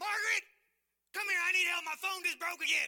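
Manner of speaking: high-pitched, very loud yell. Retelling how a loud man called across the store: imitating someone yelling across a store. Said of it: "he's yelling across the store".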